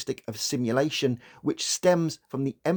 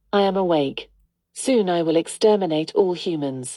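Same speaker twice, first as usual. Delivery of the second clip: put-on flat assistant voice; 4 semitones higher, 5 dB louder than usual. Closing a psychology video, the speaker quotes their home assistant in a monotone Alexa voice. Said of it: "in her monotone voice".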